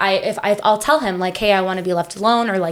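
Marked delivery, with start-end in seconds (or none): none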